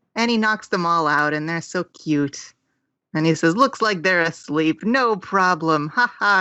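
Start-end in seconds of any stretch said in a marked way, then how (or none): none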